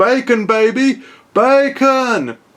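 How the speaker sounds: mock loud yelling.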